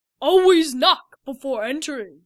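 resounding, very loud booming voice. A voice from inside addresses visitors who walked in without knocking, booming. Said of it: "a voice boomed from inside".

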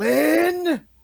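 high, loud, furious yell.

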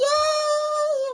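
very high, joyful squealing cheer. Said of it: "I was like".

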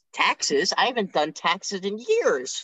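high, swooping, drawn-out voice swinging up. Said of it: "I can't do a Dave Rubin voice".

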